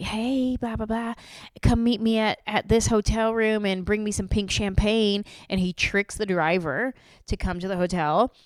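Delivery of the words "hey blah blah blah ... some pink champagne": fake girl voice, higher. Retelling a movie scene where a guy tricks a driver: imitating a put-on girl voice. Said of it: "This guy's doing a girl voice".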